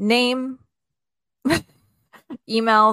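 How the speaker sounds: laughing while talking. Listing required registration fields, laughing while talking. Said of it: "I don't know why I'm laughing".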